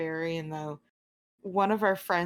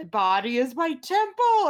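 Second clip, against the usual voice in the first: swooping, loud, slow, rising gym-bro rage cry; 7 semitones higher, 7 dB louder than usual. Retelling how a friend's jock bro barbarian raged: imitating a jock barbarian yelling. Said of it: "he would just yell out".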